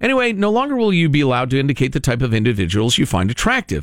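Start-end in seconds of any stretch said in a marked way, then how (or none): none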